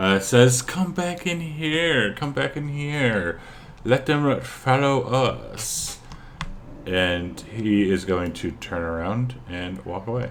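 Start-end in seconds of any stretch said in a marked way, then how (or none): 0.6-6.0 sweet, sultry voice, pitched up. Game master voicing an unseen speaker calling the ice troll back: sweet, sultry voice. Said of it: "it's a sweet, sultry voice".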